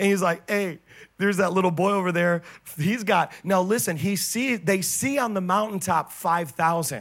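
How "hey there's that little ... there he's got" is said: put-on sarcastic voice, louder. Retelling a Bible scene as Andrew hears Philip and Jesus: imitating sarcastic Andrew. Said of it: "And he gets sarcastic".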